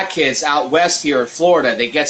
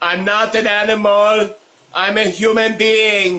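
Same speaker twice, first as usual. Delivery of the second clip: Hamburg German accent, pitched up; 6 semitones higher than usual. Prompted to say the film quote again, the speaker uses a Hamburg German accent. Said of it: "Say that in a Hamburg accent".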